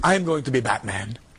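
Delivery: put-on heavy, laid-on Mexican accent throughout. Retelling a conversation, the speaker quotes him in a thick Mexican accent. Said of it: "he's got a very thick Mexican accent".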